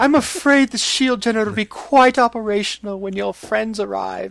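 thick put-on Irish brogue. Quoting the villain revealing the evil plot, Irish-sounding accent. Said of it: "Is he Irish?".

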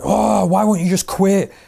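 mock rough shouting. Retelling how two managers in a room told the speaker to quit: imitating someone shouting. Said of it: "shouting at me".

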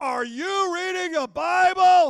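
very loud, high, far-carrying, room-filling voice. Retelling what a man said after walking up to the speaker, in a very loud voice. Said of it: "in a voice when you could hear it in a room that's probably 2-3 times this".

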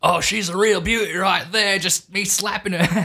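put-on Aussie accent, pitched high. Joking about a man and his wife, in a fake Australian accent. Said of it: "my Australian accent's going".

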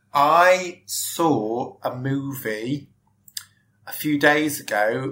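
very slow, drawn-out, stalling speech. Answering which movie they saw while trying to remember: talking slowly. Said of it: "I'm talking slowly".

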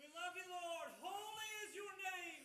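admiring, very high-pitched, very quiet. Giving praise to the lord after being asked: loud, audible voice. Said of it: "In a loud, audible voice".

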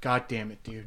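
acted voice close to crying. Retelling what a friend said when he was about to cry: imitating someone about to cry. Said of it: "Bo's about to cry".

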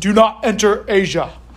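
slow, drawn-out, big resounding divine voice. Speaker acting out the voice one of them heard, booming voice. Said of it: "this booming voice that says".

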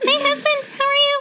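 very high cartoon cat voice, pitched way up. Imagining a wife greeting her husband, the speaker does a Pikachu voice. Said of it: "I'm annoyed just at the fact that I could make that voice".

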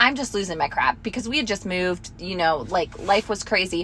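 ordinary delivery

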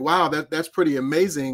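normal talking voice

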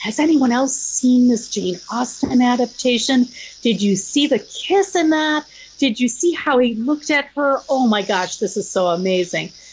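half-whispered, stage style. Retelling how the podcast felt at first: imitating a hushed voice. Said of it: "saying in a hushed voice".

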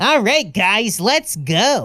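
cheesy, edgy anime-dub hero voice, drawn out. Showing how he talks as a cheesy, edgy guy character, edgy guy voice. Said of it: "I start talking like this".

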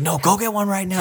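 very high-pitched, insistent yelling. Acting out a mom telling her kid to go now: imitating a mom yelling. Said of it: "yelling at you".

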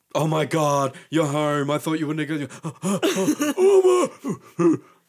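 very loud, swooping, high talking-dog voice. Answering what dogs think by impersonating a dog. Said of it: "I like impersonating things".

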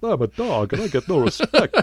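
high, bouncy, sing-song cartoon dog voice. Recalling a cartoon where the comedian voiced a dog: Rodney Dangerfield impression. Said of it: "So he's all like".

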